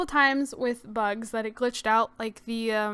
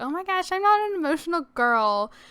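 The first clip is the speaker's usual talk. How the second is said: mocking, pitched-up pick-me girl voice; 6 semitones higher than usual. Mocking her own earlier remark about not crying: imitating a pick-me girl. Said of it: "came off sounding very pick-me girl".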